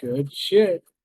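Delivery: put-on drunk character voice. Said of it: "His breath is strong with alcohol right now".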